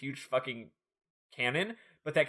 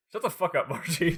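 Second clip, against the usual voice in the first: mock irritated, exasperated, fed-up tone; 4 semitones higher than usual. Retelling a game scene where Bart answers Margie: imitating annoyed Bart. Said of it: "he's super annoyed by this".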